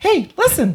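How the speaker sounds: very high squeaky voice. Quoting a fairy from a Zelda game: Navi voice from Zelda. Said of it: "it's from a Zelda game".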